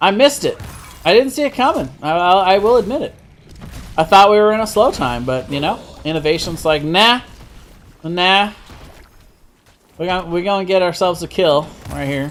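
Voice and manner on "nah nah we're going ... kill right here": put-on southern accent with a twang. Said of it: "why they have a southern accent".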